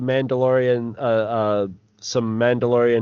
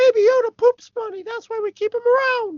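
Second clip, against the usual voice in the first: very high, squeezed-up, squeaky cartoon voice. Joking with another speaker about Baby Yoda, in a Mickey Mouse voice. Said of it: "No more Mickey voice".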